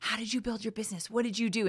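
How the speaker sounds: hushed, half-whispered voice. Retelling a secret phone call made from under an office desk, half-whispering. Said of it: "I'm whispering to her on the phone".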